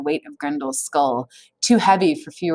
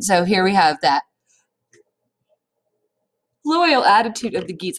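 yawning while talking, higher pitch; 4 semitones higher than usual. Speaker discussing a text aloud, yawning while talking. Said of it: "I'm so sorry, I'm yawning".

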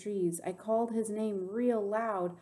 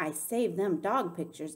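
ordinary delivery, nothing marked

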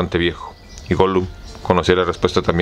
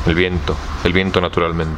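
usual speaking voice

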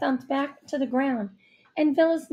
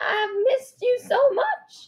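raspy, scratchy, high voice; 10 semitones higher than usual. A woman hugging the narrator's mom, scratchy voice. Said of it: "her scratchy voice kept repeating".

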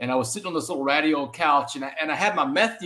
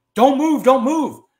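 very high, very loud, shrill, top-of-lungs scream; 11 semitones higher, 9 dB louder than usual. Recounting a cop standing over him with a rifle, retelling a cop screaming. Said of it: "he's screaming at the top of his lungs".

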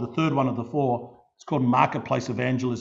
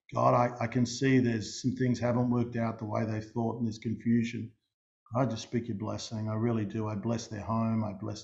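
soft, lowered, reverent voice; 2 semitones lower, 6 dB quieter than usual. Retelling a blessing spoken over someone in the marketplace: lowered voice. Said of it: "in that tone".

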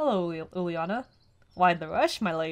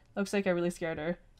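ordinary delivery

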